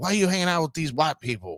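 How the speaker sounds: high yell with big pitch swoops. Retelling a man yelling at them as they walked by, in Uncle Ruckus's voice. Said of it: "yelling at us in Uncle Ruckus's voice".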